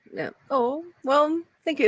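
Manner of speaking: put-on very high-pitched elderly woman voice. Showing the one voice they can do consistently, elderly woman voice. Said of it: "I could talk like this".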